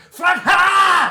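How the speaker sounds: shouted goblin cry. Game master voicing a big goblin charging down, goblin shouting a word. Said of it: "one comes down and is like, ... shouts out a word".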